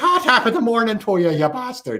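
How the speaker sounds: hammed fake Irish accent. Imitating someone in an Irish voice: put-on Irish accent. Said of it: "Irish, like".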